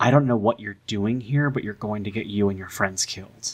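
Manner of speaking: muttered, mumbled speech. In a roleplay, a character walks up to the professor, out of the crew's earshot, muttering. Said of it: "just kind of mutter to".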